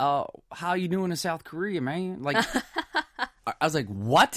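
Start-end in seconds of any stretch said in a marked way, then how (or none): 0.0-2.2 put-on Texas accent, much higher. Quoting a police officer from texas greeting the speaker, in a texas accent. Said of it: "I'm from Texas".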